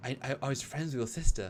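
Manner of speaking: overwrought, over-emoting, stumbling, stammered earnest delivery. Retelling how Brent talks with her: imitating Brent talking softly. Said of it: "he talks so softly with her".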